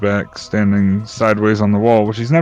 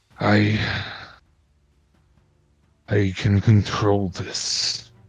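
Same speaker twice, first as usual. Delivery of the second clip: slow, trembling, very drawn-out quivering whisper; 6 dB quieter than usual. Voicing Strahd as he drops back: Strahd with a quivering voice. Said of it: "you can kind of hear a quiver in his voice".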